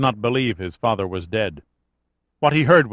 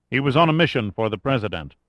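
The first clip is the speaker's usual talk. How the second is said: ordinary delivery, nothing marked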